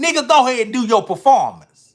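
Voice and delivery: very high, very loud, booming, animated, big pitch swoops. Retelling a phone call from a performer who missed his flight: Pimp C voice. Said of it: "Let me say it in his voice".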